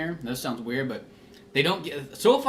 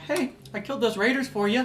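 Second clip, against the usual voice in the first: mild-mannered, very high-pitched voice; 9 semitones higher than usual. Gamer describing a game's opening character; imitating soft game-character voice. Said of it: "He's got such a soft voice".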